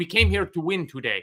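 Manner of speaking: put-on Spanish-accented English. Retelling a voice heard on the stream before kickoff: imitating a Spanish accent. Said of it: "It was an Iberian accent saying".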